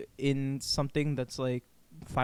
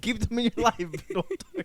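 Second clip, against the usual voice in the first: giggling through words, higher; 9 semitones higher than usual. Repeating the other speaker's advice back: laughing while talking. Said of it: "because you keep laughing".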